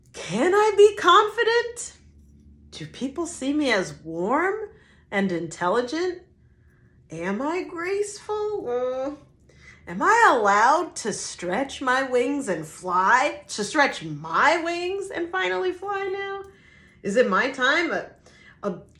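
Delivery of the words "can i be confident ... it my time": self-doubting, uncertain, doubtful tone, pitched higher. Rereading a tarot card's message as the challenger: doubtful challenger tone. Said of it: "let me read that again in challenger tone".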